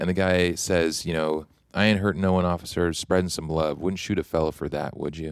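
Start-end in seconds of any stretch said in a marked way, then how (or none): none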